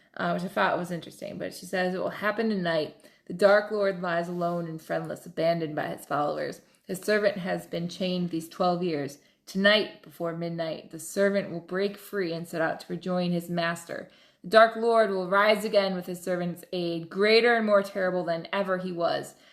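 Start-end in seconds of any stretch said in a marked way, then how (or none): none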